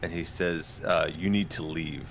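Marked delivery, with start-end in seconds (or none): 1.1-2.1 low growling, snarling voice. Voicing a character who tells the group to leave: snarling. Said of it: "I think he just snarls".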